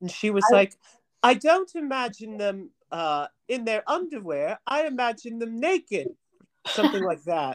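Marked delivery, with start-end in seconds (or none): 1.2-6.1 terrible, barely attempted Australian accent, higher pitch. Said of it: "that was a terrible Australian accent".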